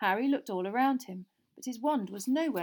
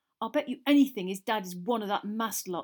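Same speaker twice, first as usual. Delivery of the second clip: heated, hot-tempered tone. Walking off after being taunted, one of the friends speaks hotly. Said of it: "said Ron hotly".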